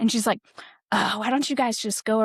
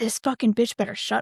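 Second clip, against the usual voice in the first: mock-angry loud outburst. Retelling what the speaker's partner said in a confrontation, imitating someone loud and angry. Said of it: "She's not being quiet".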